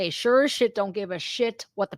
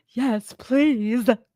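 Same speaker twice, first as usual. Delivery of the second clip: derisive, mocking put-on voice. Retelling what a woman said at a meeting, imitating a woman at a meeting. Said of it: "Did I do a good impression?".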